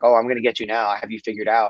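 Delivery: put-on monotone sarcastic voice. Retelling a fighter taunting his opponent at round's end: imitating Dominic Cruz's monotone sarcasm. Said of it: "monotone, you know, super sarcastic tone of voice".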